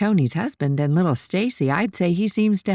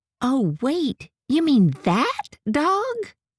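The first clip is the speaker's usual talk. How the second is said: voice kicks up an octave, high and swooping; 7 semitones higher than usual. Reading a woman's reply in a story's phone call, her voice kicking up an octave. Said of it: "Her voice kicked up an octave".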